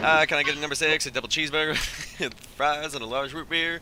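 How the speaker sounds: rattled off very fast like an auctioneer. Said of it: "Start talking like the auctioneer".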